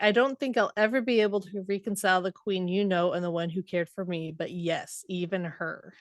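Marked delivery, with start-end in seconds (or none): none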